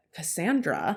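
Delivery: a single word said with attitude. Telling about a Facebook message from a woman, saying Cassandra with attitude. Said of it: "I can't help but to say her name with attitude".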